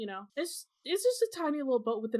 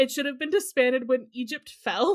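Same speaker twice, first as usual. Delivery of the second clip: usual speaking voice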